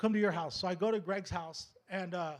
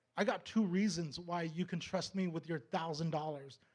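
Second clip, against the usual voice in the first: ordinary talk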